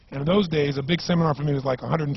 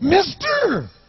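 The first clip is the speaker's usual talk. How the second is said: weird, bizarre, very high-pitched voice; 7 dB louder than usual. Retelling a man who came up to beg from him, in a bizarre-sounding voice. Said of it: "He had this really bizarre-looking sounding voice".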